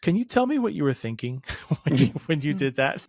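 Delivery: mock dry pointed sarcasm, swooping sing-song rise. Acting out what one might say to young people: put-on sarcastic tone. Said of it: "very sarcastic side that just wants to say".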